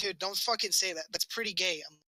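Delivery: ordinary delivery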